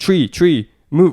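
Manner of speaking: put-on shouting. Retelling how people behind the camera warned the runner: imitating people shouting. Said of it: "people shouting".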